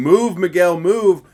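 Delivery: loud referee-style ringside yelling. Retelling what the referee shouted during the fight: imitating a referee yelling. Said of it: "the ref was yelling".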